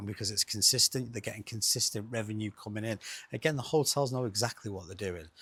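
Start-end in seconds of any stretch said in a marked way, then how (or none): 1.1-5.3 hurried rapid delivery. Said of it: "I know I'm speaking very quick".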